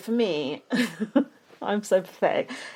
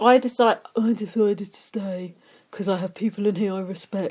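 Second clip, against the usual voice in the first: put-on English accent; 3 dB quieter than usual. Quoting what a contestant said about staying: imitating Ty in an English accent. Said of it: "Why are you talking with an English accent now".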